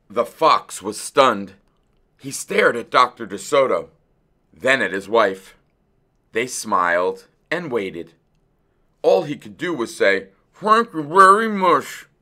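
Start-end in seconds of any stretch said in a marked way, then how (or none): 10.5-12.0 forced, through clenched teeth, higher pitch, loud. The stunned fox thanks Dr. DeSoto and his wife, through clenched teeth. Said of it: "through his clenched teeth".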